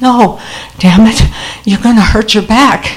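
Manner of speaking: put-on strained, effortful voice. Retelling what Mom said, propping herself up on her elbow: acting out mustered strength. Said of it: "mustered all her strength".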